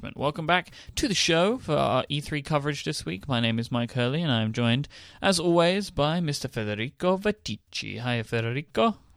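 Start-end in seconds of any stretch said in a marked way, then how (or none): 6.2-8.9 strong fake Italian accent, slower. Introducing the co-host on the show, strong put-on italian accent. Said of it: "It's got a very strong accent".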